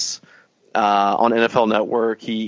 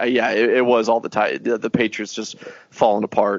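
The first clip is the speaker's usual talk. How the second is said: usual speaking voice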